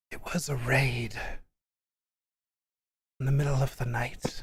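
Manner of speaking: very breathy, airy voice. A character answers an interviewer's question about this place, in a very breathy voice. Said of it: "He says with a very breathy voice".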